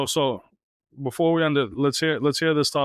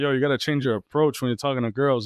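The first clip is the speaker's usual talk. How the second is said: ordinary talk, nothing marked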